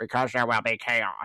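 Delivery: robotic, computer-generated text-to-speech voice. Reading a professor's typed words aloud: robotic voice. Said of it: "I wanna do the robotic voice with that".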